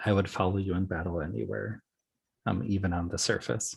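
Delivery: speaking in a whisper. Voicing a character pledging loyalty to the Mermaid Queen: whispering. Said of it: "kinda just whispers to her".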